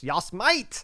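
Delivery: strong, heavy emphasis on Yas Might. Reading a result where the name ends in an exclamation point, emphatic on yas might. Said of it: "You got to say that with emphasis".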